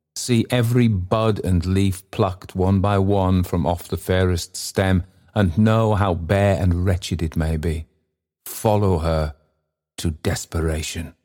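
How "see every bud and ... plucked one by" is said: usual speaking voice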